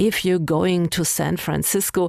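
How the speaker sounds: normal talking voice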